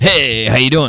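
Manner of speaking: loud, laid-on cartoon hunk voice. Describing wanting to sound like Johnny Bravo while learning: Johnny Bravo voice. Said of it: "Johnny Bravo".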